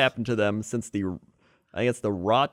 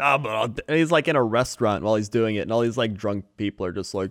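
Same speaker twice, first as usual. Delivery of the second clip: ordinary delivery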